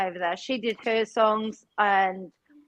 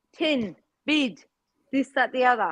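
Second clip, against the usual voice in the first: put-on New Zealand accent, bed as bid, ten as tin. Imitating a friend's New Zealand vowels: imitating Chuck's Kiwi vowels. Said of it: "And that's like Chuck".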